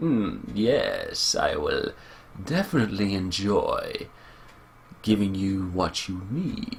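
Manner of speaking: very low, very soft, hushed, savouring murmur. Describing an actor's character who takes pleasure in everything, mock-relishing. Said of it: "taking pleasure in everything".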